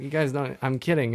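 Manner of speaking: normal talking voice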